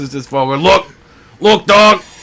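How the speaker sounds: high New Jersey accent. In conversation, doing a Joey Diaz New Jersey accent. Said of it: "New Jersey accent".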